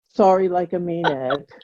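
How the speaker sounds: put-on sarcastic, insincere, grudging tone. Acting out the kid answering the teacher: imitating a sarcastic, insincere apology. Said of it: "Now say it like you mean it".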